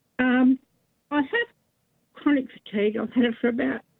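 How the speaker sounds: emotional, halting, voice breaking mid-phrase. A caller on a radio phone-in telling her story to the host, emotional. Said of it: "Sorry, I'm emotional".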